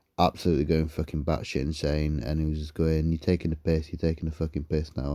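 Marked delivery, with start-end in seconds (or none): none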